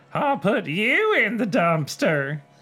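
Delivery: very high, squeaky, mean dummy voice. Reading aloud a scene where Lindy makes Slappy speak: Slappy voice. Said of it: "Very different Slappy voices".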